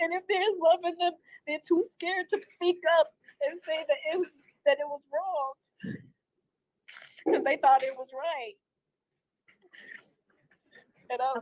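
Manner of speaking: talking while crying, words broken by tears. Telling a listener about feeling unloved by the tribe: crying while talking. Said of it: "sorry for crying".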